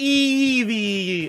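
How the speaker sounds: Eevee with strong, high-pitched stress on the first E.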